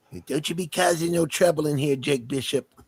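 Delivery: put-on tiny, crusty old lady voice, very high-pitched. Describing a character's voice, then performing one of her lines, crusty character voice. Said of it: "she's got a very crusty voice".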